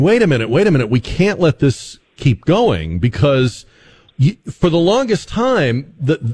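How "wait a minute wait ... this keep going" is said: ordinary talk, nothing marked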